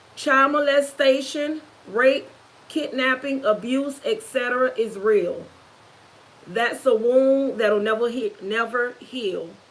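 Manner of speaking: ordinary delivery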